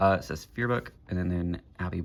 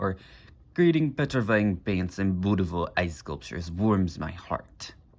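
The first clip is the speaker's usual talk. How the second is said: badly done put-on Russian accent. Reading an artist spotlight answer aloud, in a bad put-on Russian accent. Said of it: "All that's R G one-esque accent. I can't do a Russian accent very well".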